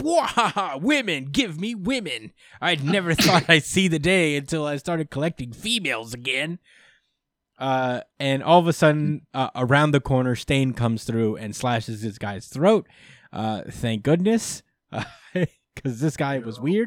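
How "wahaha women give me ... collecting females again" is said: high, goofy oddball voice, laughing and rambling. Recapping a scene, the speaker imitates a barefoot man wandering around: imitating a goofy weird man. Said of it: "weird, goofy, barefoot man just walking around going like".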